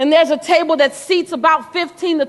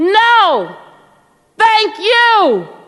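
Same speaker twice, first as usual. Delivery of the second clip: put-on yelling, higher and louder; 5 semitones higher, 4 dB louder than usual.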